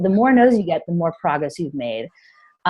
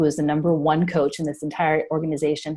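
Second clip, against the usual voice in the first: ordinary talk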